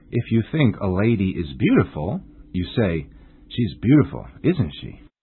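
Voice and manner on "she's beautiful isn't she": falling pitch on tag isn't she. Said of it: "you must use a falling intonation".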